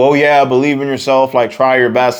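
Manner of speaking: ordinary talk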